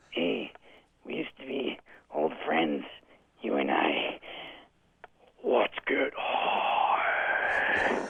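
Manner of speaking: very slow horror villain voice, every word stretched out. Doing an impersonation of a movie scene for the others: Freddy Krueger voice. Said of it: "Freddy goes something like this".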